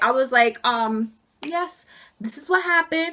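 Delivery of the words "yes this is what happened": refined, very sophisticated, polished-sounding tone. Retelling a call to Human Resources after being fired: imitating own sophisticated voice. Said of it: "I was being so sophisticated".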